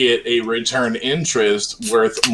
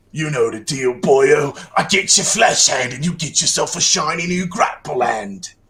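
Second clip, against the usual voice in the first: tough London gangster heavy voice; 4 semitones higher than usual. Voicing a character mid-scene for the group, in a Vinnie Jones-like voice. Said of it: "You sound like Vinnie Jones from Snatch".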